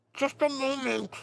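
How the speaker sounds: very high, talking through a full mouth. Narrating a game scene where she pulls ashes from her pouch, talking with mouth full. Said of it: "with her mouth full, she's like".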